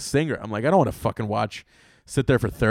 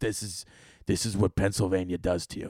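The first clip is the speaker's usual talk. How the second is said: put-on grizzly voice, quieter and slower; 4 semitones lower, 6 dB quieter than usual. Retelling what a woman checking reservations answered, imitating a grizzly voice. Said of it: "why are you talking with this grizzly voice".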